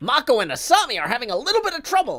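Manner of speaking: loud, swooping, classic mid-Atlantic radio announcer accent. Speaker attempts the radio announcer from a show: classic mid-Atlantic accent. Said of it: "Can I do a classic mid-Atlantic uh, accent".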